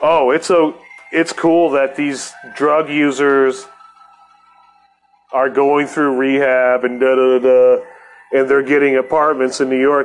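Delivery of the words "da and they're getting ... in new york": normal talking voice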